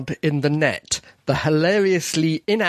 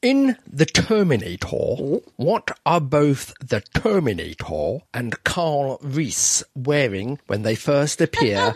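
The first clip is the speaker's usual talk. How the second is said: deliberate, unhurried, slow, drawn-out delivery; 2 semitones lower than usual. Reading the next trivia question to the players in a slow voice. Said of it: "you were speaking in your slow voice".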